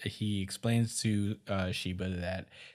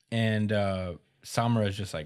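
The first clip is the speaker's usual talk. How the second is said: normal talking voice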